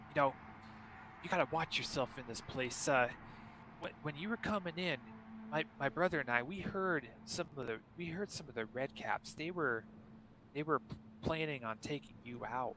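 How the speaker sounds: hushed, secretive, conspiratorial whisper. Voicing Pin as he hops up close to the player, Pin's conspiratorial tone. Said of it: "in a more conspiratorial tone".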